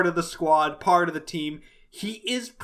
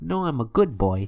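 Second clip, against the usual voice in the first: put-on smarmy character voice, lower; 4 semitones lower than usual. Imitating a smarmy double agent's reveal: smarmy Geoffrey St. John voice. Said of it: "It's just like".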